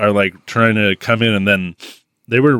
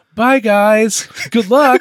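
very high, slow, post-dubbed delivery; 14 semitones higher, 3 dB louder than usual. Retelling a film character's farewell: imitating a dubbed ADR line. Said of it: "in a, a very, uh, A D R line".

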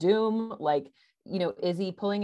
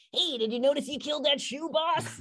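very high, squeaky cartoon weasel voice; 10 semitones higher than usual. Retelling a cartoon scene, imitating the weasel sidekick's voice. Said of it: "I like your delivery".

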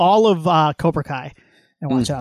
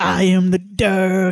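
very slow put-on cartoon voice, dog stretched out; 3 semitones higher than usual. Joking during a chat about a Hawaii trip, answer in a Cartman voice. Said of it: "That's my Cartman impression".

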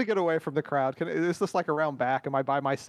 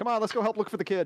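performed, pitched-up, for-show delivery meant to be overheard; 5 semitones higher than usual. Playing a game, the speaker's character says this so watching guards overhear: speaking loudly. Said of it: "I say loudly so that they can hear".

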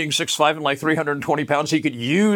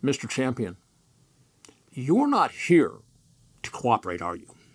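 put-on quiet, calm, menacing tone; 3 semitones lower, 5 dB quieter than usual. Retelling what a man calmly said to Mr. Champion, retelling a calm menacing tone. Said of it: "Said in sort of a menacing tone".

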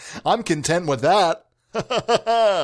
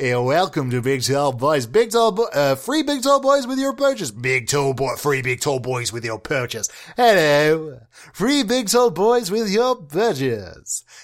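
slower announcer-style voice. Warming up by trying out different voices, the speaker does an announcer voice. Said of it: "that one's also kind of the announcer one".

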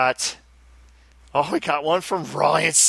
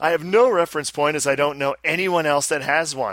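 ordinary talk

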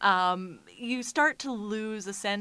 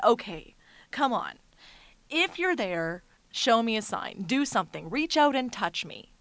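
put-on fed-up, slightly cross, mildly mad, irritated tone; 3 semitones higher, 3 dB louder than usual. Retelling daring a ghost to show a sign: retelling getting a little mad. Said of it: "started to get a little bit mad and said".

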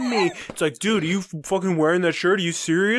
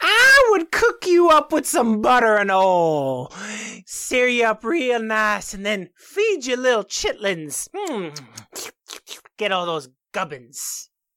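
put-on southern swamp hag voice, oil drawn out; 3 semitones higher than usual. Given the prompt Southern Swamp Hag, a performer commits to a southern swamp hag voice. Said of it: "I committed to the bit".

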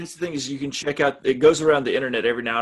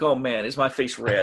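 usual speaking voice

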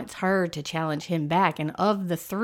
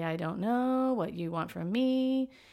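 questioning rising lift at the end of phrase; 3 semitones higher, 5 dB quieter than usual. Mocking how young people go up at the end of every sentence: imitating uptalk. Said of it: "go up at the end of every sentence".

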